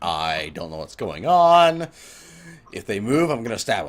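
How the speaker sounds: guarded, cautious, wary critter voice. Voicing a creature's thoughts as it watches the players: cautious, wary creature voice. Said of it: "he's being very, uh, cautious".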